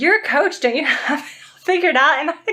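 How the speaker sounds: high-pitched, talking through laughter. Quoting what people ask about being a coach: laughing while talking. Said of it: "I can't even say it without laughing".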